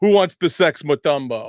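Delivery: big, loud, booming call-out voice. Retelling a story of a man walking into a bar at Georgetown, in a loud, deep voice. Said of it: "in his in his loud, um, deep voice is like".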